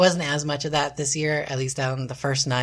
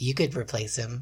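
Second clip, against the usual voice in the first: quieter, menacing, threatening voice; 4 dB quieter than usual. Retelling a woman's sudden switch to a threat: imitating a menacing voice. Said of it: "she flipped to something much more menacing".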